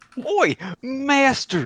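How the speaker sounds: put-on Australian accent. A player combining two requested voices into one, in an australian bar hooligan accent. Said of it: "Where's my Australian bar hooligan?".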